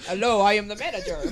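deep robotic character voice. Playing a droid manager in a bit, using a deeper voice. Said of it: "A deeper voice".

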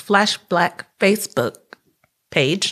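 very slow, deliberate, each word drawn right out. Speaker naming the page they posted in, spelling it out: said slowly. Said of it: "I gotta say that slow".

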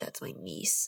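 gruff, hushed, breathy, barely whispered voice. Describing the moment Leon meets the bartender, doing Leon's gruff voice. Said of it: "Leon's voice was kind of like gruff and also funny".

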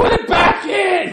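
very high, very slow, shrill, drawn-out furious yelling. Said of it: "you hear a woman angrily, uh, shouting at him".

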